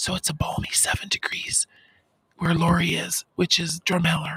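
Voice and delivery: whispering. Reading out the weather after being told not to yell, whispering. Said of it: "I'll whisper".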